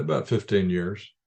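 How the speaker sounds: ordinary delivery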